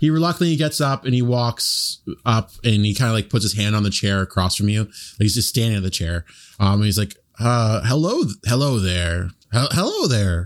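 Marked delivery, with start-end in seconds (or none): 7.4-10.5 very slow, halting, stilted alien voice. A character reluctantly walks up to your chair and greets you: alien just learning to speak. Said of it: "He's an alien just discovering how to speak".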